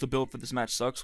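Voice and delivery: ordinary talk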